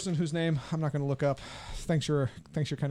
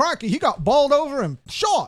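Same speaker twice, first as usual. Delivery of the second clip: botched put-on Cockney accent, very high, very loud; 10 semitones higher, 11 dB louder than usual. Voicing a guy from another town in a bad put-on Cockney accent. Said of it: "I cannot do a Cockney accent".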